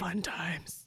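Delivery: put-on, deliberately deep, very low voice. On a podcast, answering the other host, in a really low voice. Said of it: "that was really low voice".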